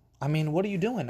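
mock screaming. Speaker recalls calling to their girlfriend about a water bug, imitating own screaming. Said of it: "I'm screaming".

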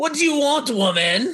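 very high put-on cartoon character voice. Host doing a favorite kid's-cartoon line for his Cartoon Network spot, put-on cartoon voice. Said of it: "You're doing a lot of voices tonight".

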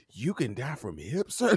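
grave, completely earnest, dead serious tone. Retelling a friend's wide-eyed question: imitating a friend's dead serious question. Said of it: "He was dead serious".

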